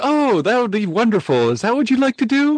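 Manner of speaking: put-on sweet, old man voice. Retelling how the game master ran the table: kindly grandfatherly Jim Ward impression. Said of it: "being T P K'd by your kindly old grandfather".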